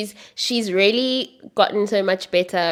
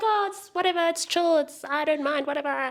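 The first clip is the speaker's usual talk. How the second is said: put-on high, nonchalant, offhand teen voice. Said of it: "he's already doing that".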